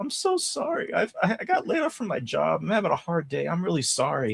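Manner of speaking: acted out, high, teary, sobbing crying. Retelling a scene where a woman caught stealing apologizes: imitating someone crying. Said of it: "she starts crying".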